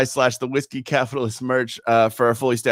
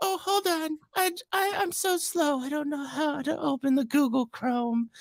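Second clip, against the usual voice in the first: very high, put-on fake elderly lady voice; 9 dB quieter than usual. Retelling a man using a voice changer on calls, old lady voice. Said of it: "old lady like voice changer thing".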